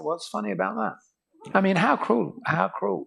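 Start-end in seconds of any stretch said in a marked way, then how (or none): 0.0-1.5 put-on dry, flat, dead-serious deadpan. Retelling a prank joke, the crowd's reply: imitating a deadpan reply. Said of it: "everybody would deadpan and say".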